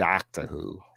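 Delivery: put-on American accent. Showing how americans say "doctor who": american accent. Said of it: "the way the Americans say Doctor Who".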